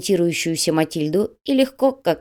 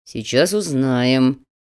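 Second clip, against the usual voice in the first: through gritted teeth, lower pitch; 5 semitones lower than usual. A man pinning a struggling girl in a car answers a question, through clenched teeth. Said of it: "Сквозь зубы процедил Слановский".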